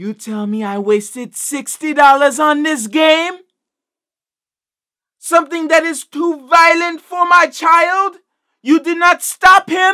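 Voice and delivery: very high, loud, put-on Jamaican accent. Quoting a woman complaining about a game bought for her child, Jamaican accent. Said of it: "Why does she sound like a Jamaican witch doctor?".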